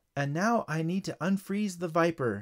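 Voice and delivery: ordinary delivery, nothing marked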